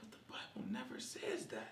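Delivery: soft whispered voice. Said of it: "I was like".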